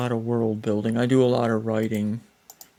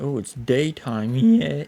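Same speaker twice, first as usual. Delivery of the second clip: voice breaking, cracking mid-line; 3 semitones higher than usual. The speaker suddenly notices it's daytime: voice cracking. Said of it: "my voice cracked there".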